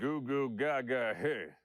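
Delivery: put-on cocky cowboy voice. Reading a mean tweet aloud in a stupid cocky McCree voice. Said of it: "stupid, cocky McCree voice like".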